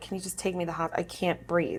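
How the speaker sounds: acted-out crying. Retelling begging her son's mom to take her to the hospital: retelling a crying plea. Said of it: "and I'm like crying".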